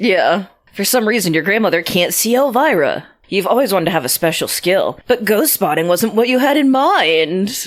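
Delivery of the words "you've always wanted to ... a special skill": usual speaking voice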